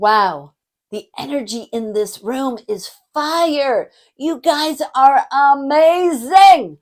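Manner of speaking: loud, high, big hyped-up voice. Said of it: "set the tone using my body language, the tone of my voice".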